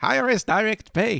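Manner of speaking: cheerful, upbeat put-on voice, high and unhurried. Repeating what the CFO said: [name]'s put-on happy voice. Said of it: "With a happy voice".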